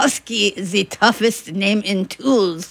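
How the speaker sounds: put-on thick, heavy German accent. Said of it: "in his thick German accent".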